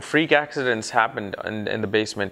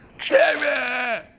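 mock very high-pitched, drawn-out yell; 14 semitones higher than usual. Retelling calling out to his wife from the stairs, retelling a yell. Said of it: "yelled at her".

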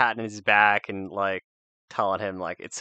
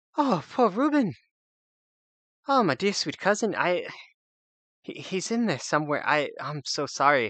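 put-on halfling voice, much higher; 8 semitones higher than usual. Voicing Barbara right after the players tell him: Barbara voice, catching breath. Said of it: "you tell him and Barbara kind of starts like catching his breath even harder".

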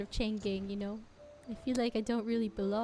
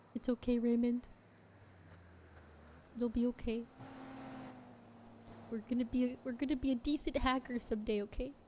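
crying, tearful voice; 2 semitones higher than usual. Reassuring someone who says he crumbles under pressure, crying. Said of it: "Are you crying?".

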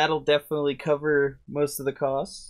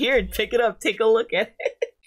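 high put-on eager shopkeeper voice.

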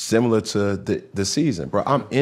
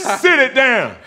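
yelling, higher pitch and louder; 7 dB louder than usual. Retelling hearing the kids upstairs jumping around: imitating himself yelling at kids. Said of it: "Are you yelling?".

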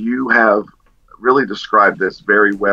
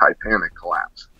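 plain

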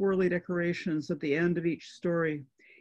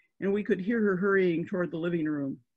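usual speaking voice

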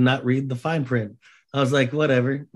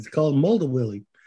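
put-on sarcastic delivery. Retelling a teasing answer about a christmas gift: imitating own sarcastic tone. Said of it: "my sarcastic ass was like".

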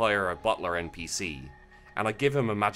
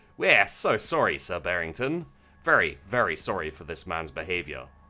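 ordinary talk, nothing marked

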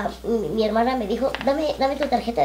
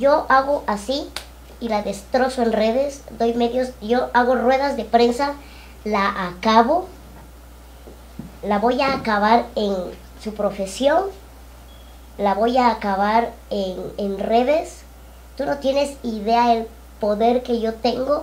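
usual speaking voice

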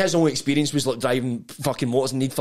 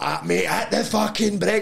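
scream rasped out harshly; 4 semitones higher than usual. Retelling how they screamed at the driver heading toward a wall, retelling a scream. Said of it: "I've screamed at him".

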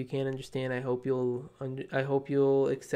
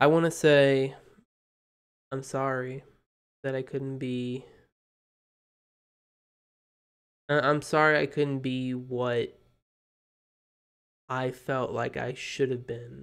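voice cracking, breaking with emotion; 3 dB louder than usual. Apologizing to the channel's viewers at the end of an announcement, voice cracking with emotion. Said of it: "my voice just cracked because of this moment".

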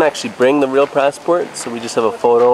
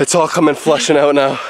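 normal talking voice

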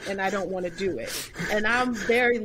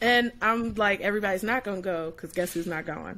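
ordinary talk

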